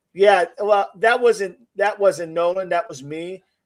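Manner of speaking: normal talking voice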